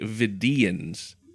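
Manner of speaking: Vidians, weight on its second syllable. Discussing how a word is pronounced, stress on second syllable of vidians. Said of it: "The emphasis is more on that, that second syllable".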